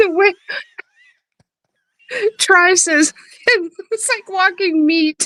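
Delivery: talking through laughter. Reacting to a funny video with another speaker, laughing while talking. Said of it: "I cannot stop".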